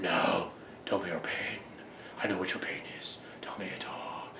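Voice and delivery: very quiet theatrical whisper, barely voiced. Showing how movie characters talk to each other, a dramatic whisper. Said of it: "whispering. Like this".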